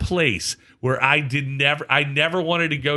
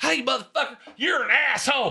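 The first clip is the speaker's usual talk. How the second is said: play-acted, pitched-up, high yelled delivery; 10 semitones higher than usual. Retelling what a man yelled at the speaker from the fence line, imitating his yell. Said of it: "He is yelling at me from the fence line".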